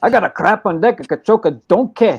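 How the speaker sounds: put-on, cartoonish Scottish accent. After a Scottish accent is said to sound like Shrek, a speaker tries a Shrek-style Scottish accent. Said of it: "the Shrek accent".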